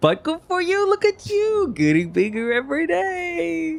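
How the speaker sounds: very high, slow, patronizing voice, "day" drawn out. Playing a character patting someone's head: condescending in-character tone. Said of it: "she pats you on the head really condescendingly".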